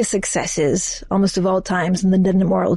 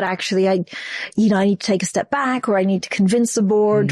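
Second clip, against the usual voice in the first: ordinary talk, nothing marked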